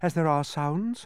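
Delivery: plain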